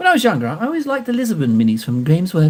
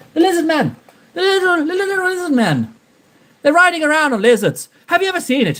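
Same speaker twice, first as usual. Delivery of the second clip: very high-pitched, put-on attempt at an Irish accent; 11 semitones higher than usual. Joking about a lizard man riding lizards: attempted irish accent. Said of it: "Don't know how close to Irish that was".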